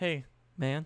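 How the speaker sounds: casual, laid-back, nonchalant and offhand. Retelling how the YouTuber greeted the developer: imitating a nonchalant greeting.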